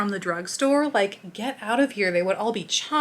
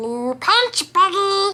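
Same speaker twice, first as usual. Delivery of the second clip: very high, loud, mad, furious cartoon alien voice; 10 semitones higher, 6 dB louder than usual. Speaker recalls quoting Lilo and Stitch lines as a kid, mock-mad Stitch voice. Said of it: "I'm cringing right now doing these voices".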